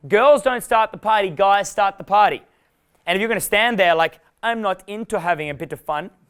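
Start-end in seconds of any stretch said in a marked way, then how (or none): 4.4-6.1 fake German accent, quieter. Acting out a guy standing at a party refusing fun, German accent. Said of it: "I love the German accent".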